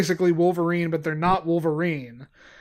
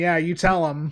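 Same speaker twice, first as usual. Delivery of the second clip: usual speaking voice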